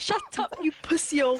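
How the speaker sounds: loud, sassy delivery with extra flair. Imitating how people there say the insult: imitating an extra spicy insult. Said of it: "make it extra and spicy like that".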